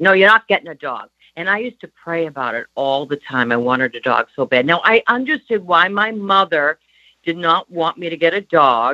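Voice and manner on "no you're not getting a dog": put-on Boston accent with broad vowels. Retelling how mother refused a dog, imitating mother's Boston accent. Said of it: "in her Boston accent".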